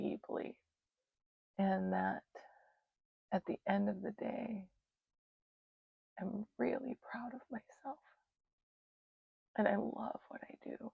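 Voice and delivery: speaking through tears. Speaker shares a heartfelt message, crying while talking. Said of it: "And so here I am crying".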